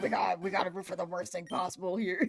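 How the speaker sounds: put-on chain smoker's voice. Quoting chat members who want to root for the worst thing: chain smoker voice. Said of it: "the Chainsmoker voice".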